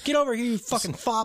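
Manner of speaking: very high-pitched, shrill, acted-out screaming rant. Retelling a mother's angry pounding on her son's locked door: imitating a mother screaming. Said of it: "as she's screaming these in-, insults and slurs".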